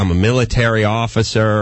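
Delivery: ordinary talk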